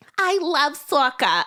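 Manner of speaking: child's high, put-on New York accent. Retelling walking in as a child and speaking up: new york accent. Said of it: "hope she likes this New York accent".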